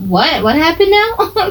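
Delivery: high, slow, drawn-out, mock-casual nonchalant voice.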